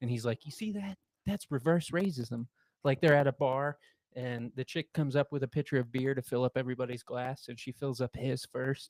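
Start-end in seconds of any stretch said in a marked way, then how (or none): 0.4-2.5 half-whispered, hushed stage whisper aside. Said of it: "whispering in Rob Schneider's ear".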